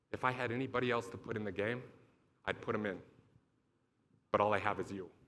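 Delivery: quiet, hushed half-whisper under the breath. Retelling how the coach then spoke quietly: imitating Urban half-whispering. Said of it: "it's a whisper".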